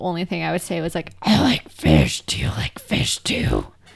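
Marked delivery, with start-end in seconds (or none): 1.2-3.7 put-on very slow, whispery, breathy old-smoker rasp. Retelling a childhood bit in a put-on old smoker's voice. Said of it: "I used to act out with a voice like that too".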